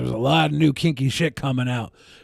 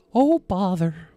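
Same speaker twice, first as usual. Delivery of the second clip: very high, squeaky little cartoon mouse voice; 6 semitones higher than usual. Imitating a man who talks like a cartoon, in a Mickey Mouse voice. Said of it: "He's like Mickey Mouse voice with a Winnie the Pooh philosophy".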